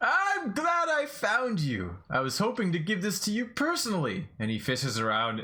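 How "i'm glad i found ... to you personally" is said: very high, swooping, cheerful, beaming voice. Narrating a scene, as Captain Red Ted greeting the listener, smiling Captain Red Ted. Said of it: "Big smile on".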